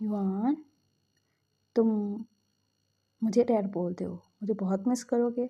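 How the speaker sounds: ordinary talk, nothing marked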